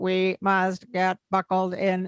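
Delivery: flat, monotone, mechanical robot voice. Giving examples of voices that change a mood, robot voice. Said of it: "one of my examples with the robot voice".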